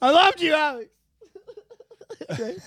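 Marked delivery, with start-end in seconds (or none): 0.0-0.9 loud, high-pitched, overwrought, really upset cry. Acting out a dramatic scene for the whole neighborhood, really upset. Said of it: "you got to get really upset".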